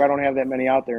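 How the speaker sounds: ordinary delivery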